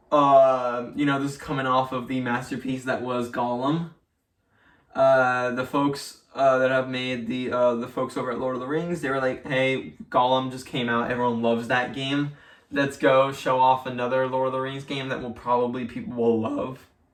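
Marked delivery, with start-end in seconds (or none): none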